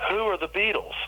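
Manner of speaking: baffled, pitched very high.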